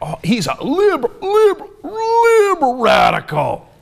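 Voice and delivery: put-on, very high, very slow, drawn-out scornful sneer. Imitating political ads that demonize the word liberal: imitating a scornful, demonizing tone. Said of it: "So they say it like".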